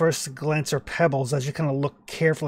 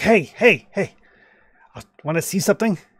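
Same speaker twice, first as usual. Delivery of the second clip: put-on drunk, conspiratorial voice, higher, louder; 5 semitones higher, 6 dB louder than usual. Retelling a man leaning in with beer on his breath, imitating a drunk conspiratorial man. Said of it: "drunk conspiratorial type of lean in".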